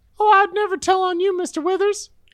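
very high-pitched, sentient, talking door voice. In a role-play, a sentient bathroom door speaks up at a secret bathroom meeting. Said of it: "No one wants to talk to a sentient door while they're getting their dick out".

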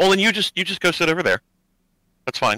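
high, dismissive brush-off. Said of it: "he goes".

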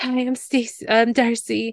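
high, slow, awkward, halting delivery. Describing a woman meeting a man, imitating an awkward greeting. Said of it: "she was just like so awkward".

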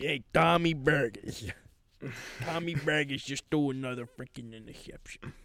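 poorly done Long Island accent. Complaining that Tommy Baggers threw another interception: bad Long Island accent. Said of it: "That's how like a Long Islander would say".

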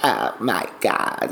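drawn-out, stretched words in vocal fry. Showing how the Kardashians talk: Kardashians vocal fry. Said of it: "they call it vocal fry, and it's like".

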